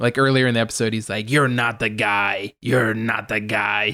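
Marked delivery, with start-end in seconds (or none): 1.3-3.9 deep, slow, flat, unvarying growl. Quoting a character's line from the episode in a deep growly monotone. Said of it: "really deep, like monotonous voice ... that growly sound".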